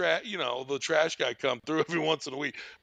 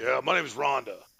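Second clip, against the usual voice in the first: mock-deep, put-on baritone voice; 3 semitones lower than usual. Retelling a call, the speaker quotes a woman giving her name to Dave: imitating a baritone voice. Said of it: "with that fucking baritone ass voice".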